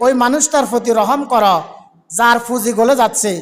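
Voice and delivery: ordinary delivery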